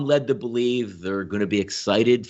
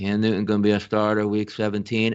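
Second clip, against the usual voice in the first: flat, level monotone with no lift. Retelling a press conference, imitating Bill Belichick monotone voice. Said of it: "the same monotone voice came out".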